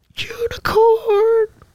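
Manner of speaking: failed, very high-pitched, drawn-out squealing voice.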